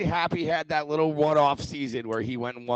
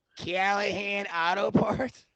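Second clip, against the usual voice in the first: Midwestern movie voice, much higher; 4 semitones higher, 4 dB quieter than usual. Discussing the movie Tommy Boy, quoting it in a Tommy Boy voice. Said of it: "you've got that voice down pat".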